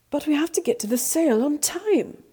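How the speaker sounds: urgent, high-pitched, protesting tone. Narrator reading Noddle's reply, protesting. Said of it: "protests Noddle".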